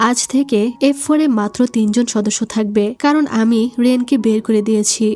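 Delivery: ordinary delivery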